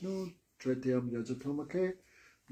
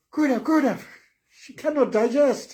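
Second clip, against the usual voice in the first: put-on very high, loud Chinese accent; 12 semitones higher, 7 dB louder than usual. Retelling someone's words about their very old grandmother, in a chinese accent. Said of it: "I'm just doing the Chinese accent".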